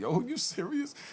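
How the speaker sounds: high-pitched, laughing disbelief. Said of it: "I started laughing hysterically".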